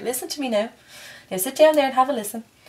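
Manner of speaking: put-on Irish accent, old mother voice. Speaker addressing the listener, in an old irish mother voice. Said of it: "Gonna sound like an old Irish mother".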